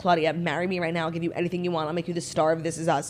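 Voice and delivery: ordinary talk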